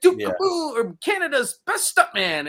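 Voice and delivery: very high character voice with wide swoops. Retelling an actor greeting a young fan: Duke Kaboom voice. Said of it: "and he does the voice".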